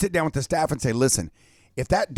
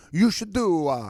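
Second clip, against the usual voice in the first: mock Italian accent, higher; 4 semitones higher than usual. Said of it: "shouldn't you say that like an Italian accent?".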